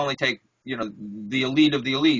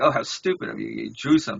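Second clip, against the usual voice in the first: put-on mocking, condescending tone; 2 semitones lower than usual. Retelling how art teachers dismissed figurative art: imitating condescending art critics.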